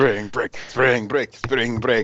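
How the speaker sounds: terrible put-on Russian accent. Game master voicing a crowd gathering around, in a terrible Russian accent. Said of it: "You doing that in a terrible Russian accent".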